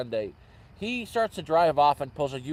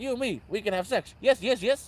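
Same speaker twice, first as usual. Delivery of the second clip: put-on broken-English Indian accent, pitched up; 8 semitones higher than usual. Quoting what a man said to them, in his broken Indian accent. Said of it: "Very broken Indian accent".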